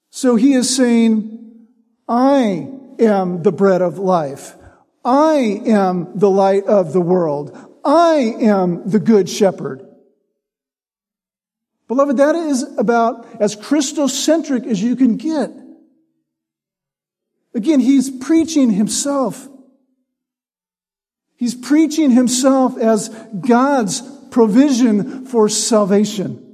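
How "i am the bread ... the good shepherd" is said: slow, weighty stress on each I. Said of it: "it puts all the emphasis on him".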